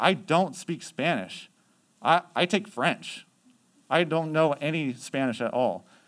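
put-on, really defensive, insistent tone. Retelling what a girl said when the group doubted her: imitating someone getting defensive. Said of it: "she started getting really defensive".

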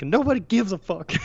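mock drunk hollering, high-pitched. Retelling a TV scene where a drunk character yells: imitating a drunk yell. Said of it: "and he yells".

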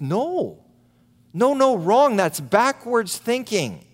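booming, emphatic, very loud and high delivery. Speaker imagining what Jesus would say if here today, in a very loud voice. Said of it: "he would say in a very loud voice".

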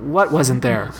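ordinary talk

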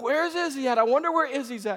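loud calling out. Retelling a hide-and-seek game with a daughter: retelling saying it loudly. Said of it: "just saying real loud".

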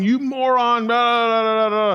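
mock yelling. Imagining local drivers getting out after a wreck, imitating drivers yelling. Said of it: "they would get out and they'd start yelling".

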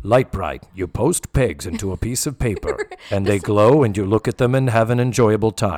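put-on loud, commanding, authoritative old-guy commercial announcer voice.

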